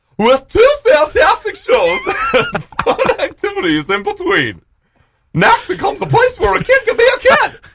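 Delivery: very high, loud, swooping wacky voice. Asked to try a voice, reading a festival ad aloud: wacky inflatable tube man voice. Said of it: "like the voice of a wacky inflatable tube man".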